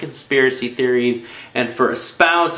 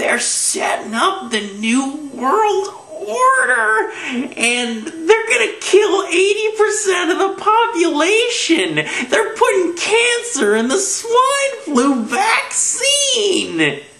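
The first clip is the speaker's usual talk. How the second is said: put-on delighted, thrilled voice, very high, swooping. Imitating what a man says, sounding mock-happy and excited. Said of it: "he's just really he's he's happy about it".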